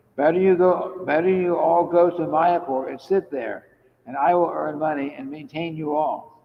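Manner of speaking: ordinary talk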